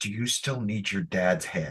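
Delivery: secretive, leaning-in, hushed half-whisper. Leaning in toward another character to ask a question, half-whispering. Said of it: "lean in and whisper".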